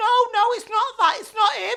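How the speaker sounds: tearful, upset, high-pitched crying voice. Retelling a friend's tearful phone call, imitating Beverly crying. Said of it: "she's crying, and I mean crying".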